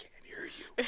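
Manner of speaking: soft, whispered, mouthed dismissive tone.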